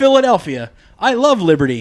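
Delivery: put-on nice, neighbourly, robotic Canadian accent. Retelling friendly canadian robots strolling up to people in philly, friendly canadian robot voice. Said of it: "some nice Canadian robots just fucking strolling up".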